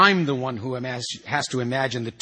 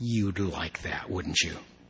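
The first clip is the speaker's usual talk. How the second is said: contemptuous sneer, low and quiet; 6 semitones lower, 8 dB quieter than usual. Lichtner answers Noonan's suggestion that he divorce, sneering. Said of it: "polished off his Campari with a sneer".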